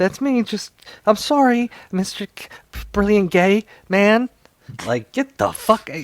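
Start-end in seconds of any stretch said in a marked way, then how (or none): 0.0-4.3 mock groveling, scared pleading voice, higher, louder. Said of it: "quivering in a corner".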